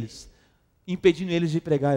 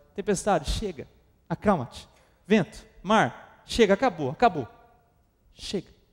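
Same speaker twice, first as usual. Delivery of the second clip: put-on firm, final tone. Acting out Jesus rebuking the storm like a spoiled child: imitating someone hushing a spoiled child. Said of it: "como se ele tivesse emudecendo uma criança mimada".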